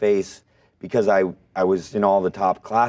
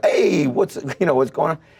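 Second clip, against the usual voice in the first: put-on Brooklyn accent on every word, pitched up; 7 semitones higher than usual. Retelling how he answered her phone calls at home, put-on Brooklyn accent. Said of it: "I wouldn't answer in the accent".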